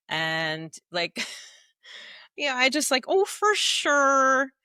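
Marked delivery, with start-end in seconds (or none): 3.1-4.4 loud put-on Minnesota accent, long drawn-out "sure". A speaker recalls noticing the local accent after going back, mock Minnesota accent. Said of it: "I was much more aware of it".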